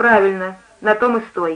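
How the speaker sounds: ordinary delivery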